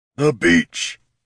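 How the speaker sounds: words grated out in a rough rasp. Narrator reads a warrior's reply as he points his warhammer, rasping. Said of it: "he rasped".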